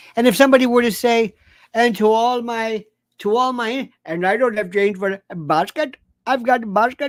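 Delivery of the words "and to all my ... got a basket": put-on Indian accent, slow and drawn out. Imagining what somebody might say, the speaker puts on an indian accent. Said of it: "you're doing an Indian accent".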